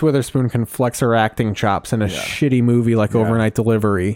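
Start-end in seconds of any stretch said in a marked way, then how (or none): none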